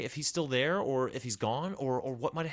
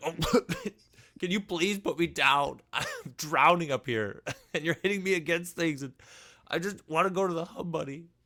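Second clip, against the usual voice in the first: choking, gagging sound through the words; 3 semitones higher, 4 dB louder than usual. Voicing a character who is being swung around and asks to be put down: gagging while talking. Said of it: "she starts to, like, gag a little bit".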